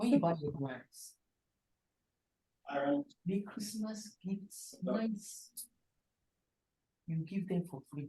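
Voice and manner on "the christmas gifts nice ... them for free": much softer hushed whisper. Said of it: "But why are you whispering?".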